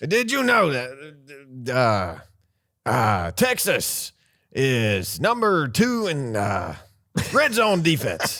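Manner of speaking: very slow, faltering, hesitant, unpolished put-on voice. Doing a Lee Corso impression while picking a game: Lee Corso impression. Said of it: "That was not my best Lee Corso".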